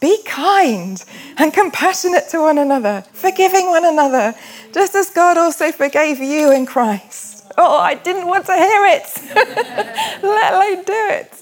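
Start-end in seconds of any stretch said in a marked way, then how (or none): 0.0-7.5 put-on fed-up, worn-thin, exasperated voice. Recalling their mother quoting Ephesians in the kitchen: imitating her exasperated voice. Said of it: "She would say with an exasperated voice".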